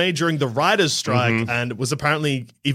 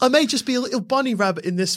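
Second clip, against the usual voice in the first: put-on very high voice with a partial Cockney accent; 10 semitones higher than usual. Playing a movie bunny rabbit whose voice people find annoying, in an almost Cockney Ricky Gervais voice. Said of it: "That went into like almost".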